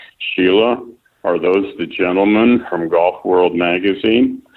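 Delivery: plain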